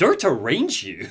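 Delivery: acted, affronted, put-out tone. Retelling a prisoner's reply to an interrogator, mock-offended. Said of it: "sounds kind of offended and goes".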